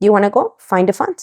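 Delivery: ordinary talk, nothing marked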